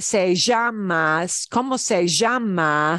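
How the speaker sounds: Argentine Spanish, "llama" with drawn-out sh for ll. Spanish lesson, question said with a very argentine accent. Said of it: "It's going to sound very Argentine".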